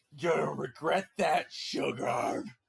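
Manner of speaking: super demonic villain voice, slow and rough. Narrating a tabletop game, voicing her after she is blasted, super demonic voice. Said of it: "her voice goes super demonic".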